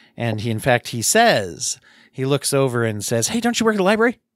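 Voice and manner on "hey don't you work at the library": restless, bouncy, agitated voice, very high. Narrator voices a young man in the corner who looks over: a little bouncy and agitated. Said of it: "seems a little bouncy and agitated".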